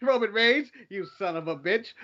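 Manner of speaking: dead serious, slightly stiff delivery. Retelling a backstage interview line: imitating Cesaro's line. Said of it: "It made me laugh".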